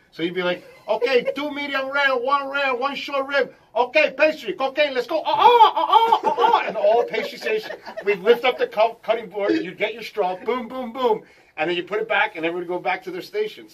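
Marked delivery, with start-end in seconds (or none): 0.8-6.6 loud, high, funny put-on Cuban accent. Retelling the chef organizing kitchen orders: imitating Cuban chef's funny accent. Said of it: "so he had a funny accent".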